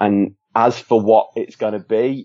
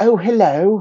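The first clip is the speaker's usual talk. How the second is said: fake British accent; 10 semitones higher than usual. Demonstrating what Americans consider to be British, in a stereotype British accent. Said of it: "it's what Americans consider to be British".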